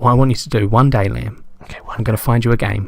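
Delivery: speaking quietly close to the mic. Leaning close to the mic to tell another speaker something: speaking quietly close to the mic. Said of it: "You're gonna hear me real quiet".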